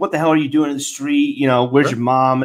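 normal talking voice

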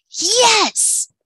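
very high, thrilled, excited shout. Narrator reads a son answering his father's agreement: excited shout. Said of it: "Nemo shouted".

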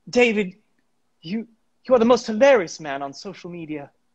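put-on fragile, frail damsel-in-distress voice. Addressing David on a show: frail damsel voice. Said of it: "I don't know why I'm going for like frail damsel".

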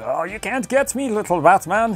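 put-on Irish accent. Voicing the Riddler answering Batman, in an Irish-accented Riddler voice. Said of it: "he's got an Irish accent".

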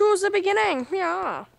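put-on German accent. Talking to the other speaker, suddenly switching into a German accent. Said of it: "Why are you German?".

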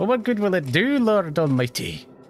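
put-on Irish accent, pitched high. Voice acting a character's line, an Irish accent. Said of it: "I need the Irish in there".

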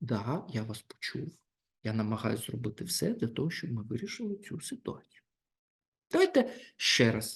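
quiet, soft-spoken, kept down. Answering someone who shouts, as a technique: quiet and slow reply. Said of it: "тим тихіше ви відповідаєте і повільніше".

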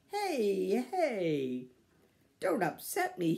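very slow, loud, jolly laughing, drawn-out words. Pa comes in with his arms full, Laura and Mary clinging to him; laughing. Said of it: "he laughed".

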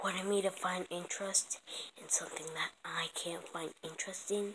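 whispered, grumbling aside under the breath.

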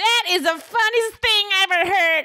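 very high-pitched voice, coughing through the words. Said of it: "it's like you're coughing".

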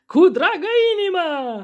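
very high, booming, full-lung yell from the gut. Asked for a welcome serenade, the band leader bellows at the top of his lungs. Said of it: "Urlă [name] din toți rărunchii".

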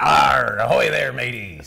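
put-on pirate voice. Put on the spot to do a little pirate voice. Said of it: "I got to do my little pirate voice for a second".

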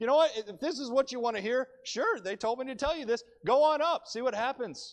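dripping with sarcasm. Retelling the prophet's answer to the king: Micaiah, dripping with sarcasm. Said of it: "Micaiah says this dripping with sarcasm".

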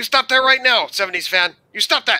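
very loud, shrill, booming put-on Mexican accent. Doing an impression of someone not there to defend himself, Mexican Iron Man impression. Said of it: "the best Mexican Iron Man impression".

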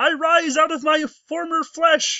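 very high, squeaky cartoon frog puppet voice. Imagining an alien hybrid voiced like Kermit, doing a Kermit the Frog voice. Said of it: "the hybrid Kermit, like".

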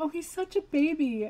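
soft cooing. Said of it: "I heard this voice and I was like".

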